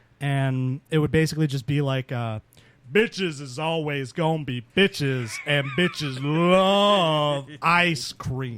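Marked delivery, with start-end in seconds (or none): 2.9-8.6 really deep, bass-heavy voice, "love" stretched. Describing an old stand-up bit, the Traquel character: really deep put-on voice. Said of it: "I'd talk in this really deep voice".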